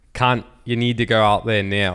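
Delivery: put-on Australian accent. Quoting a bunch of Australian friends, in an Australian accent. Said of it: "a bunch of Australian friends who are like".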